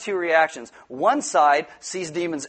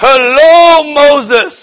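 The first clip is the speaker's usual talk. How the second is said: very high, very loud booming voice, drawn-out hello; 11 semitones higher, 16 dB louder than usual. Telling parents to do the voices when reading the Bible, the speaker does God voice. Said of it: "you do God voice".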